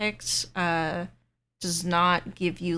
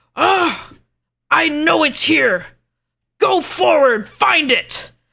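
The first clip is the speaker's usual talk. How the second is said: shrill, full-volume, high giant bellow; 9 semitones higher, 13 dB louder than usual. Voicing giants urging each other forward in a search: giants yelling. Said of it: "you all hear the giants yell out".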